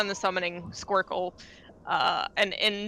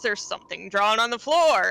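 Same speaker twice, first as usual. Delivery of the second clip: mock shout, louder; 2 semitones higher, 5 dB louder than usual. Retelling a session recap where the lead character yells: retelling a yell. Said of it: "he yells".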